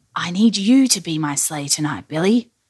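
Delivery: ordinary delivery, nothing marked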